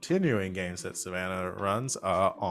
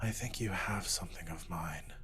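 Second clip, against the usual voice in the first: soft, quiet half-whisper, very close; 8 dB quieter than usual. Voicing a mysterious voice heard inside a character's helmet: half-whisper. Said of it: "you hear a voice, like a whisper".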